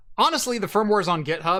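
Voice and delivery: plain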